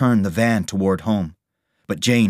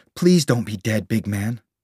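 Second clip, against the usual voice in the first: ordinary delivery, nothing marked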